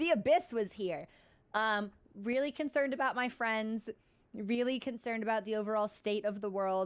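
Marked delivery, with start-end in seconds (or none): 0.0-1.1 put-on, dramatic storybook narrator voice. Reacting to signs of void influence, switching to narrator voice. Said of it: "And it's like narrator voice".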